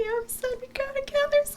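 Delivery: on the verge of tears. A player in a tabletop game speaks in character to Glub, tearing up. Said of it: "I'm just gonna tear up a little".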